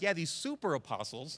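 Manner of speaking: scornful, almost mocking tone. Retelling how Paul names the false prophets: imitating Paul mocking. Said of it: "almost like a mocking tone".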